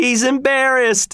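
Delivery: very high delighted squeal of pure glee. Reading fiction, a voice in the laughing crowd calls out about Freishardt; screamed with delight. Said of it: "screamed a voice with delight".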